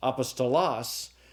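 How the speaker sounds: apostolos said with stress moved to another syllable. Showing how the accented syllable changes a word: stress moved in apostolos. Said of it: "depending upon what uh, syllable I accent".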